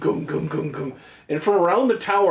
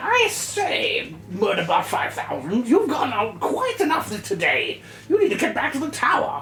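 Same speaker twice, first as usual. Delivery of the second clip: put-on high, wizened old wizard voice; 6 semitones higher than usual. Voicing an old wizard who orders the robot back to the tower: old wizened wizard voice. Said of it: "wizened, sort of Merlin-y looking wizard. He said".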